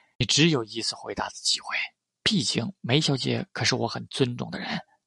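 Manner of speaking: ordinary delivery, nothing marked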